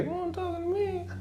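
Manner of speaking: small, squeaky, very high-pitched, soft voice. Retelling what another guy said behind him during a movie, in a little voice. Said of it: "in a little voice said".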